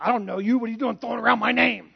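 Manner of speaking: rough, creaky voice, harsh scolding tone. Acting out Harrison Ford confronting someone who used his name: Harrison Ford impersonation. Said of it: "a pretty decent Harrison Ford impersonation".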